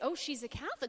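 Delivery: ordinary talk, nothing marked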